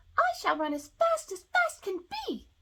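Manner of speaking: very high, shrill little voice, piped loud and slow. Reading aloud, the gingerbread man replies to her in its shrill little voice. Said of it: "in its shrill little voice".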